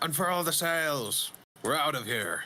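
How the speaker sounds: high, loud shouted yell. Ordering Tanis to unfurl the sails and flee: yelling an order. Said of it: "I yell at Tanis".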